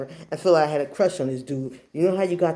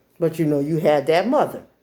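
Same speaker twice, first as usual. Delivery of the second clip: usual speaking voice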